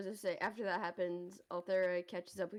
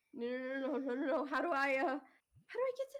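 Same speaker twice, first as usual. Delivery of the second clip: sudden, frantic panic, high and rising; 5 semitones higher than usual. In a tabletop game, a character reacts as a message cuts out: panicking. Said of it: "look excited and then immediately panic".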